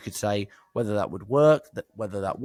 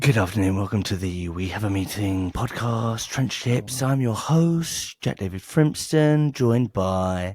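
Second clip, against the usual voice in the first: low, sultry, sexy, seductive put-on voice. Podcast host opening the show and introducing his co-host, in a low sexy voice. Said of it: "low and sexy?".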